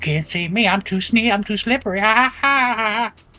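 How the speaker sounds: very high, loud, drawn-out teasing bragging taunt. Retelling how Melky taunted while sneaking behind someone: imitating Melky's mocking taunt. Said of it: "Melky literally was like".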